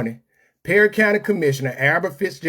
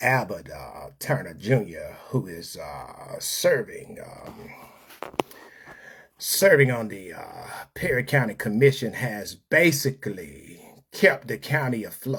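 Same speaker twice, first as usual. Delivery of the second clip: put-on voice, very low pitch, soft and quiet; 7 semitones lower, 7 dB quieter than usual. Reading about a county commissioner in Albert Fitzgerald Turner voice. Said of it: "I will read this in the voice of the uh, illustrious illustrious um, Albert Fitzgerald Turner".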